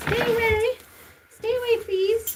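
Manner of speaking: very high-pitched inner-voice pet voice. Voicing what the pet thinks while being wiped: voicing the pet's thoughts. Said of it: "It's like".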